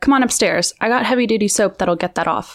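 ordinary delivery

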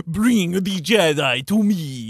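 put-on very slow, drawn-out Transylvanian accent. Imitating a film character who has a Dracula accent. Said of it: "a Dracula accent".

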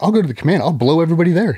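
mock, high, out-of-control screaming rant. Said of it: "she starts screaming at my C O".

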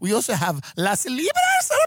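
put-on Spanish accent on every word, high, swooping. Quoting what a woman said, imitating her spanish accent. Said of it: "And she had like a Spanish accent".

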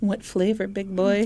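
play-acted teasing, flirtatious come-on voice. Acting out Peggy answering a diner customer, in Peggy's flirty voice. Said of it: "when I do the flirty voice".

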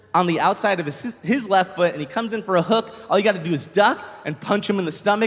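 ordinary delivery

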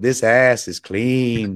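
low, ghost-story horror-movie medium woman's voice. Pitching a Tushy bidet, the speaker does the Poltergeist lady voice. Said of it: "you hear the voice of the lady from Poltergeist going".

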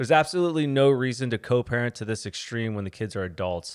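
ordinary talk, nothing marked

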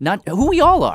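dramatic, grand, declamatory delivery.

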